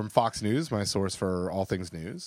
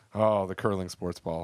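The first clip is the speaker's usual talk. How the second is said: ordinary talk, nothing marked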